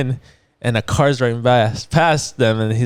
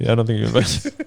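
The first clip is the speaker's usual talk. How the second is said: usual speaking voice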